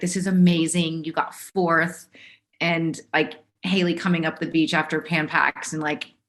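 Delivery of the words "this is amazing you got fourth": ordinary talk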